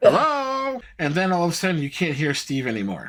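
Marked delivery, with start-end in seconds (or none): 0.0-0.8 high, rising, called-out voice. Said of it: "Steve in the background going".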